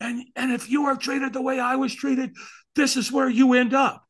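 very high, enraged, furious, acted-out screaming. Retelling how a man in a film ended his story: imitating an angry man screaming. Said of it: "And he's screaming".

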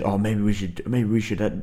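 put-on Scottish accent.

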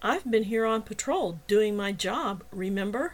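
usual speaking voice

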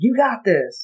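put-on bright, upbeat, cheerful voice. Describing the positivity put out there: imitating being upbeat. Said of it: "every day I'm just upbeat and like".

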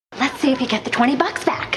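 acted out, bursting with gleeful excitement, high-pitched delight. Quoting a favorite Elaine line, throwing money out the window: imitating excited Elaine. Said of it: "She's so excited".

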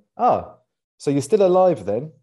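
loud, mocking, sarcastic tone. Role-playing a greeting to someone not seen in a long time: sarcastic. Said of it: "with the added sarcasm at the start".

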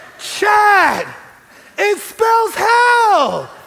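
acted, very slow, high full-lung shriek, "hell" stretched. Recalling the moment on the mountain, calling out to chad, retelling a scream. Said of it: "I scream at the top of my lungs".

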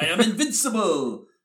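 put-on pitch way up, geeky, nerdy Russian accent. Remembering GoldenEye, a speaker imitates Boris, very Russian and geeky. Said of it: "being very Russian and geeky and just sounding like".

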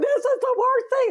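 very high-pitched, weepy sobbing. Speaker retells calling her the next day after the perm: acting out past crying. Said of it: "I called her the next day crying and weeping going".

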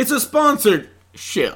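laid-on, put-on American southern accent. Voicing a character's line, slipping back into a southern accent. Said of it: "Now I'm southern again".

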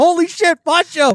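put-on, all-out panicking, high alarmed cry. Telling a friend about the scare with Poncho, the speaker acts out their panic. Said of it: "I was like all panicking".

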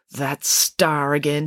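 in a mutter. Reading a story aloud, voice a character looking up at a star, muttered. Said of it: "she muttered".

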